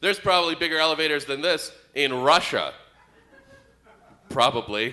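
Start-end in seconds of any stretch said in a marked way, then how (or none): 0.0-2.7 put-on snarky, sarcastic, throwaway tone. Retelling what a guy said in a crowded elevator, imitating a sarcastic remark. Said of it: "this guy sarcastically goes".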